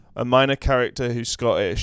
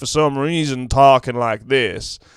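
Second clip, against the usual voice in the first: put-on Kentucky accent, louder; 5 dB louder than usual. Describing a film character's speech: Daniel Craig's Kentucky accent. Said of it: "Daniel Craig's got this Kentucky accent".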